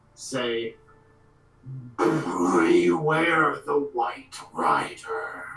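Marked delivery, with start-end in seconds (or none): 2.0-5.5 slow, otherworldly intoning in a voice not his own. A voice not his own speaks through a character, booming voice. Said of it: "just this booming voice".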